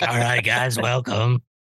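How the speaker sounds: put-on voice of a smoking woman around eighty. Retelling how they sounded hosting a show while sick: imitating an eighty-year-old smoking lady voice. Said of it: "I sounded like a eighty-year-old smoking lady".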